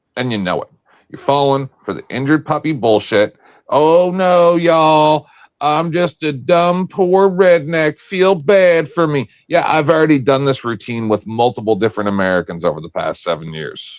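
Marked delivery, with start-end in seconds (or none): 3.7-9.3 put-on drawn-out Southern twang. Mocking someone's sob-story routine with a mocking southern twang. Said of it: "I don't know if it's a southern twang".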